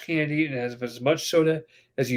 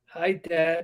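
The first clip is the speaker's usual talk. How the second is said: put-on nervous voice; 2 semitones higher than usual. Retelling greeting dad, who came to pick them up after a fight, retelling a nervous greeting. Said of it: "I'm nervous".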